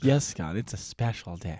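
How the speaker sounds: patronizing, breathy, condescending hushed whisper. Imitating the other speaker's earlier line: mock condescending tone. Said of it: "It just sounded so condescending".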